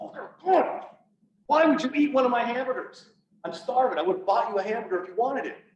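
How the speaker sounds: irate, indignant complaining. Retelling hitting the steering wheel in the patrol car: imitating own past anger. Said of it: "legitimately pissed off at my partner".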